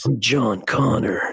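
put-on, artificially deep voice, very low. Listener closes their eyes while the speaker tries a put-on deep voice. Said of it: "He just did a deep voice. I could do that".

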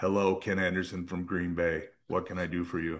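low, flat, droning monotone. Retelling how Tommy answered the speaker's regular phone calls: Tommy's monotone voice. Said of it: "in his monotone voice".

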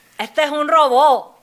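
booming, very loud, slow, deliberate Cuban Spanish accent. Redoing a joke after being told it lacked the Cuban accent: Cuban accent. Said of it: "te faltó el acento cubano".

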